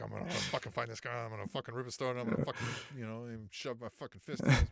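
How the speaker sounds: put-on nervous, anxious voice. Describing three men's reactions, the speaker acts out Eddie Kingston; imitating his nervous anxiety. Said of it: "nervous anxiety of like".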